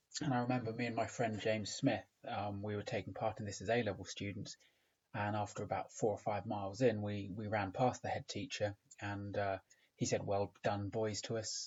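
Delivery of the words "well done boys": ordinary talk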